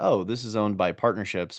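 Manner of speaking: ordinary delivery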